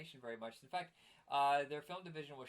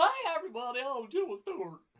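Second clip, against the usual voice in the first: cartoonish, high, loud, swooping sing-song voice; 11 semitones higher, 11 dB louder than usual. Following a remark that the last try was the worst ever, cartoon version of Jimmy Stewart. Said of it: "That was like the cartoon version".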